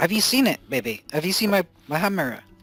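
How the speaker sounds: put-on irate woman's voice. In a role-play scene, Gloria confronts a distracted companion: irate Gloria voice. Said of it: "Gloria's looking at you quite irate".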